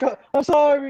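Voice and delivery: high, loud, pitiful, self-pitying, pathetic tone. Retelling a movie scene where a character apologizes: imitating a pathetic apology. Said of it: "he looks real pathetic".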